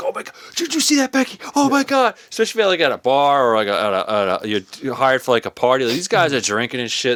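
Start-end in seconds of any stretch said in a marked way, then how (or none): 0.0-2.2 squealing, gushing, amped-up amazement, very high. Retelling how amped-up people react to a simple trick: imitating excited amped-up people. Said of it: "They're like".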